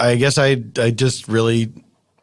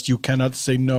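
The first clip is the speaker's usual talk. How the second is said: ordinary delivery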